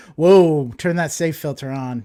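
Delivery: ordinary talk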